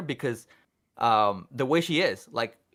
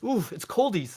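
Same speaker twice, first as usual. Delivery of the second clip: put-on high, cutesy, cooing baby talk; 6 semitones higher than usual. Retelling what was said at a cold gas station: imitating own baby talk. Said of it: "That's baby talk".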